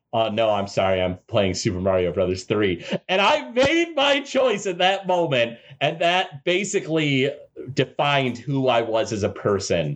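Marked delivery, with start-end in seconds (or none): 0.1-2.8 put-on, low, dry, flat, expressionless deadpan. Retelling his answer to her carnival invitation, retelling his deadpan reply. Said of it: "I just deadpan straight up looked over at her".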